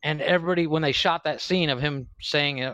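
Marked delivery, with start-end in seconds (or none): none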